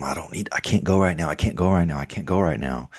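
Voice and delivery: pleading, begging voice, said over and over. Retelling begging to stay during football season: imitating own past begging. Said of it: "begging 'em".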